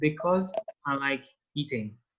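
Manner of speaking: ordinary talk, nothing marked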